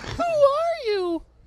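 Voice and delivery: very high-pitched, loud, squeaky voice. Describing a Batman mashup video, the speaker quotes one actor's version; squeaky Batman voice. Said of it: "the really squeaky voice where they was like".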